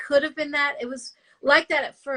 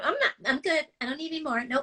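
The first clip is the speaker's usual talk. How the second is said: put-on nasal voice, quieter; 5 dB quieter than usual. Describing a woman who eats just one chip, imitating her nasal voice. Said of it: "she talks like this and she's very nasal".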